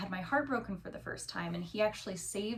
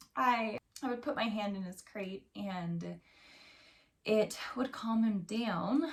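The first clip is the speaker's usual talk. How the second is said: tearful crying, voice cracking and breaking through words. Telling a story about their puppy, the speaker breaks down: crying, voice breaking. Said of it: "I can't believe I'm crying for this".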